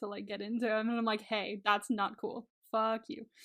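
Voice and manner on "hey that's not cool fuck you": put-on pissed-off, firm, slow, angry voice. Retelling their own reaction to a scene: imitating own angry reaction. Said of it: "that pissed me off".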